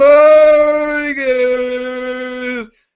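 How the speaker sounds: very high, muffled, with "guys" drawn out. Imitating a player whose audio sounds muffled: imitating a muffled voice behind a fan. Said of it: "you sound like you're behind a fan".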